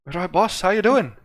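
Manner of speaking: weak attempt at an Irish accent. After saying he can't do Irish anymore, the speaker tries: Irish accent attempt. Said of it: "I can't do Irish anymore".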